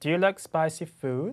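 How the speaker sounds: rising pitch lift on food. Repeating an American English yes-no question, rising pitch at the end on food. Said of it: "이렇게 인토네이션이 올라가는 그냥 yes, no question이기 때문에".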